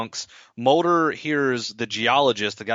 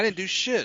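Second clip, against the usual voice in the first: high, freaked-out, losing-it outburst; 8 semitones higher, 4 dB quieter than usual. Retelling a scene where Mulder is accused of murder: imitating Mulder flipping out. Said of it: "Mulder's, like, flipping out".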